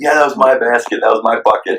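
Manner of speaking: high, sarcastic, triumphant put-on cheer. Retelling a movie scene of the coach scoring and celebrating: imitating Coach Carter's sarcastic celebrating. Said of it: "obviously doing it very sarcastically".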